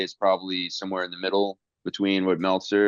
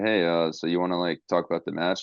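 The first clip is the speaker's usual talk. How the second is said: ordinary talk, nothing marked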